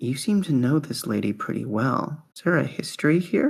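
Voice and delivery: hushed, confiding whisper. Voicing a ghost who asks a question into someone's ear: whispering as Gloria. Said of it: "sort of whispers in your ear".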